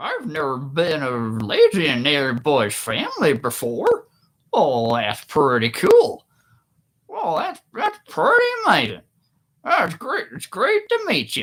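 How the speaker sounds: high swooping puppet-style voice. Speaker imitating a man they called a family legend greeting them, Kermit the Frog-like voice. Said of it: "this is what he sounded like".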